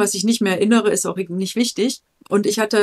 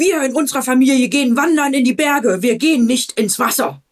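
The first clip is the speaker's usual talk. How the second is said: put-on proud, puffed-up, utterly certain, full-conviction delivery; 4 semitones higher, 3 dB louder than usual. Recalling asking a man if he likes swimming, mimicking his puffed-up conviction. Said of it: "so richtig geschwollene Brust und Überzeugung".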